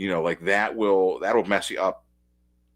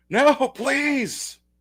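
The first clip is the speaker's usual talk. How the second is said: high-pitched mock yell. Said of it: "This, this guy's yelling".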